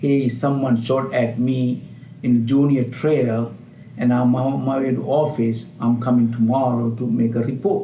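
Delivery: ordinary talk, nothing marked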